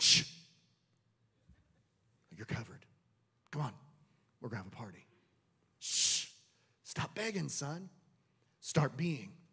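very low, hushed whisper, close in the ear. Retelling a father speaking to his begging son, a retold whisper in his ear. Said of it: "that father was in his ear going".

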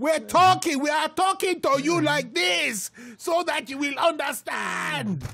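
put-on Nigerian accent. Addressing the audience so they will understand, in a Nigerian accent. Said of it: "doing your Nigerian accent".

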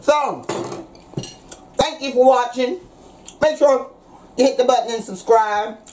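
talking with mouth full. Wrapping up a video while eating, talking with mouth full. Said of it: "Sorry I'm talking with my mouth full".

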